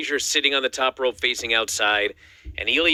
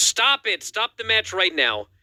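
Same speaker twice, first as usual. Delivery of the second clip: frantic, freaked-out, very high-pitched screaming; 9 semitones higher than usual. Retelling how Corey Graves reacted to a scary bump: imitating Corey Graves screaming. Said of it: "and he screamed".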